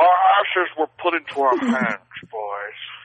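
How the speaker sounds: put-on Scottish accent. Podcast hosts try to do the whole episode as Sean Connery: Sean Connery impression. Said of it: "as if we are Sean Connery".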